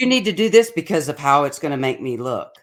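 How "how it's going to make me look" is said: ordinary talk, nothing marked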